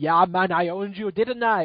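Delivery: imperfect, slow put-on Jamaican accent. Imagining a Pokémon scout as a Jamaican, voicing him in an imperfect Jamaican accent. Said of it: "I can't pull off a Jamaican accent perfectly".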